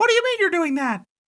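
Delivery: very high-pitched, squeaky cartoon voice. Asked what Brunzi sounded like, demonstrating Brunzi's high-pitched voice. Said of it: "It was sort of a high pitched kind of".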